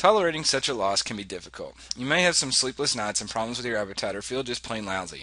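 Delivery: ordinary delivery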